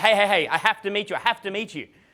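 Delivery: intense, eager pestering. Retelling how other guys approached women: imitating intense young guys. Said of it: "immature, and intense guys".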